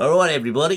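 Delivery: alternate on-air radio DJ voice. Co-host opening a mock morning show in a different radio DJ voice. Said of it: "I could do a different radio voice".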